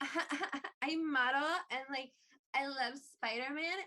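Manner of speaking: ditzy, vapid, gushing, airheaded bimbo voice. Mocking how a film shows Gwen Stacy: imitating Gwen Stacy as a bimbo. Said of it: "slutty bimbo who is like".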